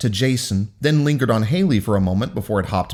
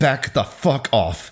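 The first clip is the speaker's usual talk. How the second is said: spoken through gritted, clenched teeth. Reading a story aloud, a character faces a crowd of gawkers, through gritted teeth. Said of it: "Haley spoke through gritted teeth".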